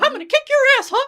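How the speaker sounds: very high, loud cartoon bad-guy voice. Quoting the villain from a cartoon episode: Mickey Mouse voice. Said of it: "Mickey's, like, the bad guy in the episode".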